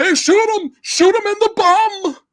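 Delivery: high-pitched villain shout. Retelling the movie's main villain ordering a shot: imitating villain shouting orders. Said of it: "the main villain guy goes".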